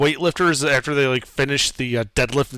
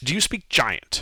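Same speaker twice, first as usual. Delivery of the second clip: fast, growled brute creature voice; 4 dB quieter than usual. Game master voices a spear-wielding creature confronting the players, growling. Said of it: "growls out".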